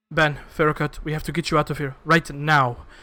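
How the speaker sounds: frightened tone. A character in a played scene addresses ben and ferrocut: scared for them. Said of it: "she is scared for you".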